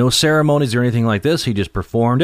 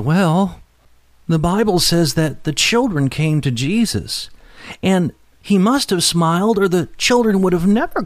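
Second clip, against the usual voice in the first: put-on nervous, timid little girl voice, pitched high; 7 semitones higher than usual. Telling a story, the little girl answers the minister, nervous little girl.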